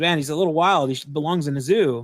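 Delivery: ordinary delivery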